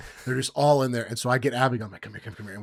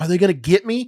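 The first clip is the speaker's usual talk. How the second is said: put-on timid, worried, nervous, high little-girl voice; 7 semitones higher, 7 dB louder than usual. Recounting feeding raccoons together, imitating nervous Abigail being called over. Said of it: "She's nervous".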